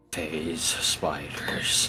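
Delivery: barely voiced, dreadful whisper under the breath. Voicing a character muttering about spiders: dreadful whisper under breath. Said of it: "I whisper under my breath ... dreadfully".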